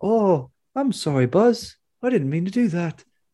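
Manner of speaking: put-on high-pitched voice in a New Zealand accent. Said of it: "one of those guys has the New Zealand accent, and he's like".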